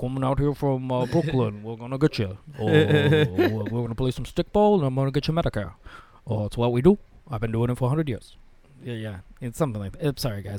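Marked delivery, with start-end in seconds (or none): 0.0-8.4 acted elderly New York accent. Doing an impression of Bernie Sanders as an old New Yorker: bad Bernie Sanders impression. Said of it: "I'm terrible at impressions".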